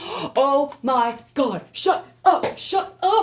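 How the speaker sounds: loud, shrill, excited freakout, very drawn out. Just after pulling the karma card, to y'all, freaking out with excitement. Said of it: "y'all don't know why I'm freaking out".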